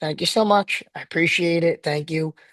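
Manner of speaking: put-on cordial, calm, steady, polite tone. Recalling how they never raised their voice: imitating own past cordial tone. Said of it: "I was cordial the whole time, and then like my tone was always like this".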